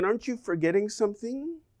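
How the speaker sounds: put-on quick, hushed, pointed sarcastic tone. Speaker retells what a person chasing them said, retelling a sarcastic remark. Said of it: "he sarcastically said".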